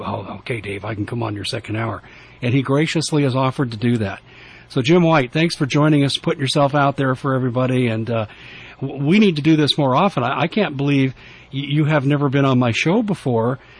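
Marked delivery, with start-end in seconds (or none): 0.0-2.0 hushed whisper, quieter and lower. The host retells how a guest answered him during a broadcast, whispering. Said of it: "he was whispering".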